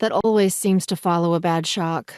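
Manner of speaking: ordinary delivery, nothing marked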